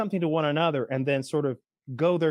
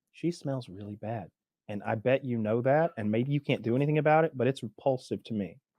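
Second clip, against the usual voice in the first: hushed, lowered voice; 3 semitones lower than usual. Retelling a complaint to a manager about a waitress: imitating own lowered voice. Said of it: "I lowered my voice".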